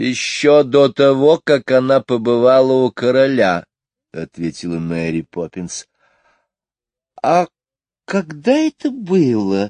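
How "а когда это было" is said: kind, tender, gentle tone with drawn-out было. Jane asks Mary Poppins a question, gently. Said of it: "ласково спросила Джейн".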